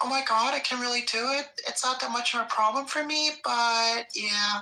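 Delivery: very high, put-on ordinary girl voice. Speaker demonstrates how they do a female voice: put-on female voice. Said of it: "if I were to try and do a female person".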